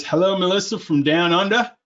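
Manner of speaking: bad, horrible, put-on Australian accent. Quoting him greeting Melissa from down under, horrible Australian accent. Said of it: "with the horrible Australian accent that I fronted right now".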